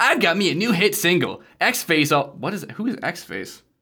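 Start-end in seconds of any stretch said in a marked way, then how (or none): 0.0-2.3 bouncy, pitched-up cartoon hero voice. Reading a character's diary entry aloud: Sonic the Hedgehog voice. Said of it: "he sounds like Sonic the Hedgehog now".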